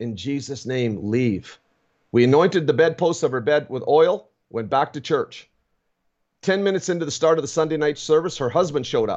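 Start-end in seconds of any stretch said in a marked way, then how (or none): 0.0-1.6 faint, weak, very slow, drawn-out half-whisper. Retelling how a very weak sick woman answered: imitating a weak half-whisper. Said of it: "And she whispered, she could barely get it out".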